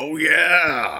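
very high, very loud, stretched drawn-out yell. Picturing bursting through a door, yelling: Kool-Aid Man yell. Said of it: "just like the Kool-Aid Man".

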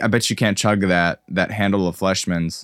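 plain

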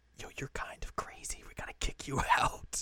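hushed whisper.

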